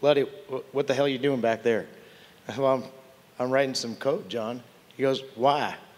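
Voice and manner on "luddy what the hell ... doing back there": put-on Texas accent, rattled off quickly. Retelling a flight on his Gulfstream, quote your good buddy John in his Texas accent. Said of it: "he said in his Texas accent".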